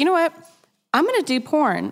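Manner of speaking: nonchalant aside. An interview guest recounts a past decision, retelling her own words nonchalantly. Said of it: "she just says it so nonchalantly".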